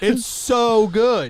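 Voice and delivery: very high, very loud, shrill yelling. Talking about a meme with a co-host, the speaker is yelling into the mic. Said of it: "sorry for yelling into the mic".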